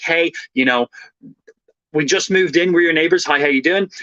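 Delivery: normal talking voice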